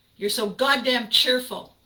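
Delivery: put-on yelling. Retelling the answer given when asked why they were yelling, retelling a yell. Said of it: "Why are you yelling at me?".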